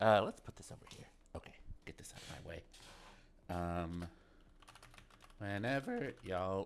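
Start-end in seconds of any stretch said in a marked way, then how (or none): 3.5-6.7 soft voice breaking and cracking on words. Just after starting the session, the speaker's voice cracks. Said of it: "that was a voice crack already".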